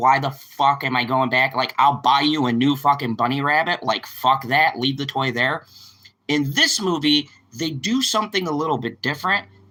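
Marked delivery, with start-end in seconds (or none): none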